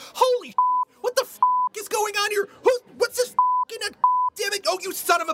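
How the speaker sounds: very high, shrill, freaked-out, rapidly rattled-off panic. Imagining how he'd react as a fish lifted by a net: panicked fish voice. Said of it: "if I were a fish ... how I would react if I was being suddenly lifted by a net".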